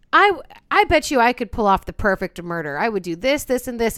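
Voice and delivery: ordinary talk, nothing marked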